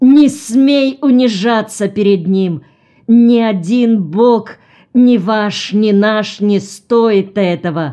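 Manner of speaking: shouting in a terrible, fearsome voice. Reading a story: a husband speaks to his kneeling wife, shouting in a terrible voice. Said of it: "закричал страшным голосом".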